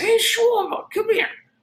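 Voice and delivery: very high Southern California voice. Retelling what a man said to him in a hotel room, in a high SoCal voice. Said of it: "really high, but like really SoCal voice".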